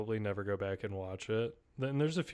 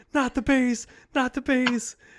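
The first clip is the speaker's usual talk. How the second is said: put-on impression, high-pitched and loud yelling. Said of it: "And he goes".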